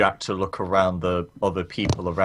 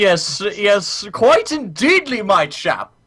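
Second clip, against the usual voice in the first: put-on posh English accent, much higher; 14 semitones higher, 4 dB louder than usual. Role-playing a character who answers a guard in an exaggerated posh English accent. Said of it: "He's not that fucking posh".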